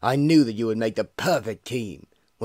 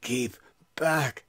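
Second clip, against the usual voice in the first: fearful, frightened, afraid keep-away tone; 2 semitones higher, 4 dB quieter than usual. A character cornered by a hero after crashing through a wall warns her off, afraid. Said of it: "You sound afraid".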